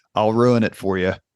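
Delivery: ordinary delivery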